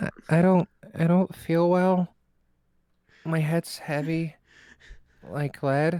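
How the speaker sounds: pitiful, very sad voice. Playing a sick character asked to talk to the doctor: very sad, pitiful voice. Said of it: "the world's saddest puppy".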